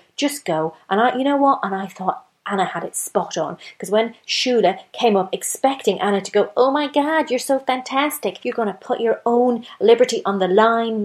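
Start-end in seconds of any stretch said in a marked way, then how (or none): 6.5-11.1 put-on American accent. Retelling what Shula expected Anna to say, in an American accent. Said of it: "I don't know why I'm doing that in an American accent".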